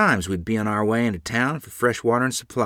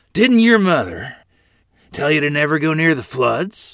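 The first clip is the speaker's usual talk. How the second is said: stern, gruff, raised, a bit shaky; 5 semitones higher, 5 dB louder than usual. The man who rescued Lorene from the flood scolds the girls, stern, gruff, a bit shaky. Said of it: "his voice stern and gruff and a bit shaky".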